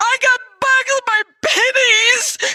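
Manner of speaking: acted, very high, drawn-out sobbing. Retelling a phone call to a doctor's office, imitating own past crying. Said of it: "And I'm like crying".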